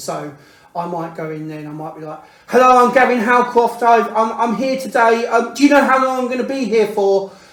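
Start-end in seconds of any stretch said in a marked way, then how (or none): 2.5-7.3 very loud, high, anxious and worked-up shouting. Retelling arriving anxious at hospital and shouting without realising: imitating own past shouting. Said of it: "I can sometimes shout".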